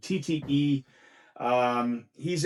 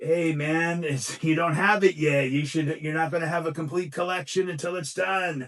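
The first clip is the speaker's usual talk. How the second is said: tempting devil voice; 3 semitones higher than usual. Explaining a purchase, the speaker voices the tempting devil on his shoulder: zoot-suit devil voice. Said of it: "So I had that voice".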